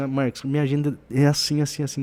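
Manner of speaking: ordinary talk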